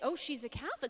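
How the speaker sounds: normal talking voice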